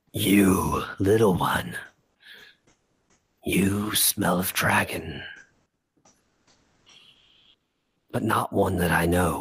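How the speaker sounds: gravelly, rough, stony voice. Narrating a voice that fills a cavern, the speaker addresses the little one, gravelly stone-shaking voice. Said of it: "creating this this gravelly voice".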